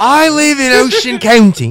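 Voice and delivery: put-on whiny voice with English accent. Doing an impression of No Filter Paul for the others: No Filter Paul impression. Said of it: "We're doing No Filter Paul impressions".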